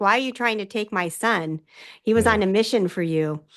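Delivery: ordinary talk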